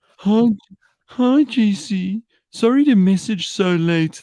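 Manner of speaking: very high, pitiful, whiny, pathetic voice. Reading out a late-night cancellation message someone sent: mock whiny, pathetic voice. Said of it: "I can just hear it in this whiny, pathetic voice".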